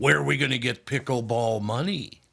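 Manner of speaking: put-on mother's voice. Reading a listener's post about pickleball, talking in his mother's voice. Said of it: "talking in my mother's voice".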